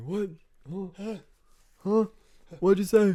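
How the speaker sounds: put-on very high, shrill, loud old man voice. Joking with a co-speaker, the speaker plays an old man. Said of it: "I'm gonna be like an old man".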